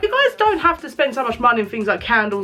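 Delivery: normal talking voice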